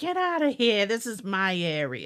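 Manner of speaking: put-on New York accent with sing-song swooping pitch. Speaker imagines the haunted doll Mandy telling other dolls off, in a New York accent. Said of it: "she's got a New York accent".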